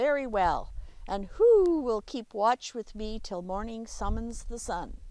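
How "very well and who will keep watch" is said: ordinary delivery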